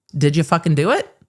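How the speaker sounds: normal talking voice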